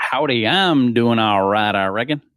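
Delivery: put-on Texas accent. A guest answering the host's greeting on the show, fake Texan accent. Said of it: "talking like a Texan".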